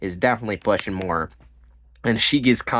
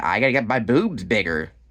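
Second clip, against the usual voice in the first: plain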